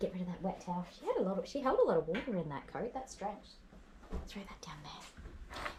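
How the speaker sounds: soft, hushed whisper murmured under the breath. Drying her wet coat with a towel after a phone call, whispering. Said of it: "I'm whispering".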